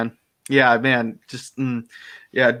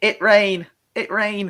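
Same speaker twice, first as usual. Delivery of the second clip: simple, high, repeated little delivery; 8 semitones higher than usual. Imitating Meg talking about the rain: imitating Meg. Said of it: "That's Meg".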